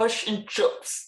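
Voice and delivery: attempted New Zealand accent. A guest, asked to give their best Kiwi accent, answers in a Kiwi accent. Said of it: "giving us your best Kiwi accent".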